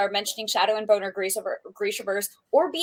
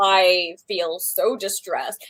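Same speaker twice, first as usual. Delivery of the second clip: very slow, drawn out, dripping with sarcasm. Complaining about there being no Saturday-only badges, dripping with sarcasm. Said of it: "This is dripping with sarcasm".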